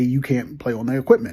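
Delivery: ordinary delivery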